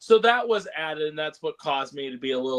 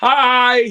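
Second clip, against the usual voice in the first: high-pitched, very loud, cheery tone. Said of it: "just going".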